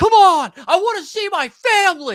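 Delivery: very high, shrill scream with pitch swinging wildly. Retelling what an opposing player screamed after the shot: imitating someone screaming. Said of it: "Somebody on the other team screams".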